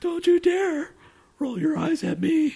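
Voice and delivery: very high, swooping, stoned cartoon mouse voice. Trying out new voices, the speaker scolds someone in a stoned Mickey Mouse voice. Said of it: "a stone Mickey Mouse or something".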